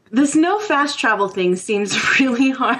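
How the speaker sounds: talking while laughing through the words. Talking about the game's no fast travel rule: laughing while talking. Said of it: "I'm laughing at the chat room".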